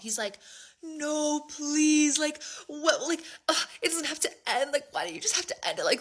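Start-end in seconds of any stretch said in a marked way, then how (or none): 0.8-5.9 high, blubbering, sobbing, tearful begging. Recounting a breakup phone call, the speaker voices the man: imitating someone sobbing. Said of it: "He starts sobbing, sobbing, sobbing".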